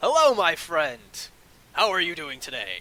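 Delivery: character voice with swooping pitch. Voicing a swarthy guy greeting a player at the bar: voicing a swarthy guy. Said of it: "the swarthy guy comes up and he's like".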